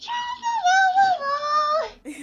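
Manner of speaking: very high, slow, with each la drawn out. Describing how the early Tataru sounded: A Realm Reborn Tataru voice. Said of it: "A Realm Reborn Tataru is like".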